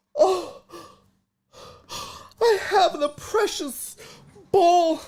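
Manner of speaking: very high, awestruck, marveling, gasping voice. Retelling how a fan made it sound he had the ball: imitating someone gasping in awe. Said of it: "He made it sound like he was like".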